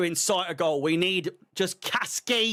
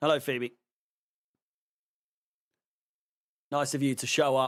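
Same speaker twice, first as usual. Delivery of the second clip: sarcastic, condescending, talking-down tone; 4 semitones lower than usual. Greeting someone who has just shown up: condescending and sarcastic. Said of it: "That sounded really s-, condescending and sarcastic".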